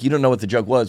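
ordinary talk

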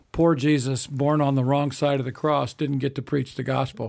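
ordinary delivery

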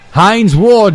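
put-on Italian accent. Speaker recalls how Mike would say a player's name, in Mike's Italian accent. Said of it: "he would say in his Italian accent".

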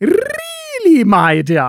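hammed-up, high, loud sleazy lover voice.

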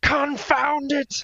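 angry, shrill, very high-pitched villain yell. Showing what you get to yell when casting a counter spell: mock angry villain yell. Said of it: "Like an angry villain".

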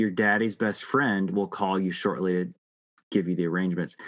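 plain

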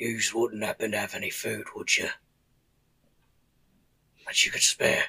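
emaciated, starving orc voice. Voicing an emaciated orc stepping out of bushes: emaciated orc voice. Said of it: "this orc speaks, and he goes".

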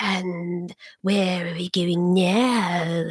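sinister snake-like villain voice, low, slow, evil. Describing an audiobook narrator, imitating his evil snaky voice. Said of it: "evil, like snaky voice".

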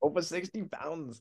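soft, put-on Russian accent. Retrying an answer after a failed attempt: put-on Russian accent. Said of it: "so this is my Russian accent".

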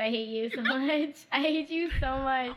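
tearful, weepy outburst, crying while talking. Speaker turns to Chris mid-tears: crying while talking. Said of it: "Crying, yes".

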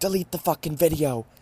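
play-acted, high-pitched, shouted yell. Retelling yelling at a man filming on a train, retelling a yell. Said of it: "I'm yelling at this man who's taking the video".

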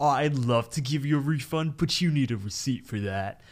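sneering, snide, condescending cartoon clerk voice. Recapping a Regular Show scene, quote the guy handling the refund, imitating a snide guy. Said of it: "the guy who's all snide".

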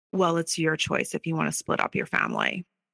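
contemptuous, dismissive, swooping disdainful delivery. Retelling what his mom said as she was packing up: imitating a disdainful remark. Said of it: "with such disdain".

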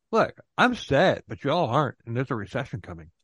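ordinary delivery

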